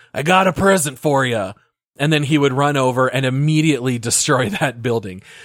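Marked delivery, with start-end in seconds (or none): 0.1-1.5 mock yelling, slower. Describing a game commando's voice line when sent to destroy a building, retelling a yell. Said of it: "he would yell something like".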